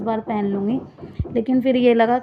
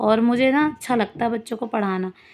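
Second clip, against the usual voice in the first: usual speaking voice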